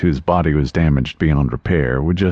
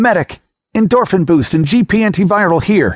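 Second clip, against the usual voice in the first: very high voice, harsh with stress; 4 dB louder than usual. A doctor calls for treatment over the wounded narrator, harsh with stress. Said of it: "There was a cold rage chained in the doctor's voice. ... It was a woman's voice, harsh with stress".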